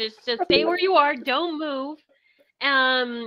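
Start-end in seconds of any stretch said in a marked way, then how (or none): none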